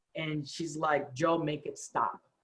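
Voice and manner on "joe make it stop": put-on sobbing woman's voice, quieter. Retelling a phone call from a woman: imitating a crying woman.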